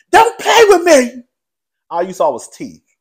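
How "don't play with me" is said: shrill, very high, very loud screaming. Retell the moment when a woman starts hollering, imitating someone hollering and screaming. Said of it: "Erica starts hollering and screaming".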